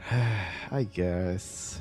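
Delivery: unhappy, reluctant. Answering a co-caster's point about playing Bloodseeker, unhappy and reluctant. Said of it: "You don't sound happy with my answer".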